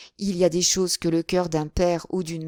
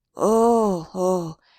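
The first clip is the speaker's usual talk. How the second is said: hoarse, rasping, rough-throated cry of oh, oh; 3 dB louder than usual. Reading a novel aloud, a character suddenly remembering: hoarse voice. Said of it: "dit-il d'une voix rauque".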